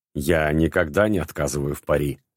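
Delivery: ordinary delivery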